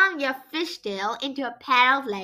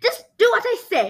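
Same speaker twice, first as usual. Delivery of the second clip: high, roaring, bellowing royal voice; 7 semitones higher than usual. Queen Aquafin orders the protesting sea creatures, roaring. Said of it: "she roared".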